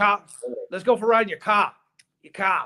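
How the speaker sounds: put-on heavy, broad Boston accent, laid on thick. Retelling what a man with the thickest accent said: thick Boston accent. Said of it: "Boston accents".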